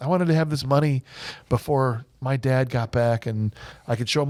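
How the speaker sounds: ordinary talk, nothing marked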